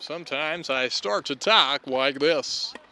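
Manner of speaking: loud, slow tennis announcer voice. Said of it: "Trying to slip into a different voice when you announce these".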